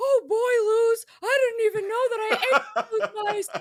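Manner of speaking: loud, squeaky, very high cartoon owl voice. Speaker offers a Hooty impression to redeem themself, Hooty from The Owl House voice. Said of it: "I can do a really good Hootie from Owl House".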